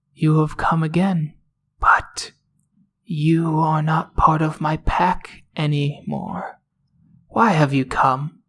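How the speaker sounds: gentle, mild, plain, simple voice. Narrator voicing an owl that has just landed before the group, speaking softly. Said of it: "It speaks softly".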